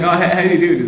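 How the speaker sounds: ordinary delivery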